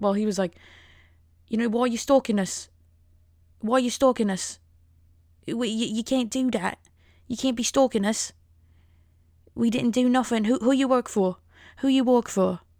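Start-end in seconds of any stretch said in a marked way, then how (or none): 1.7-12.6 attempted British accent landing near Scottish. Retelling what a man said, in a failed British accent that sounds Scottish. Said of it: "That's like a Scottish accent".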